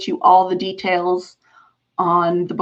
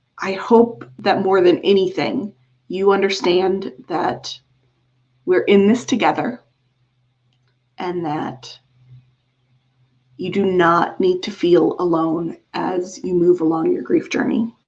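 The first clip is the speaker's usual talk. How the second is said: choked-up voice catching, on the edge of crying. Speaker telling grieving listeners they are not alone, on the verge of tears. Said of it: "now that I'm about to cry".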